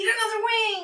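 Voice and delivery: high, loud scream.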